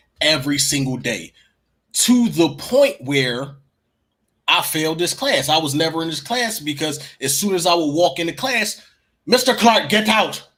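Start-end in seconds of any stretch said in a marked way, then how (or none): 9.3-10.4 high, loud, scornful teacher voice, laid on derisively. Retelling how he mocked a science teacher: imitating a teacher's voice. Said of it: "I used to mock him".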